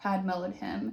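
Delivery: ordinary delivery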